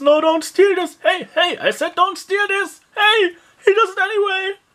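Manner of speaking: loud shouting.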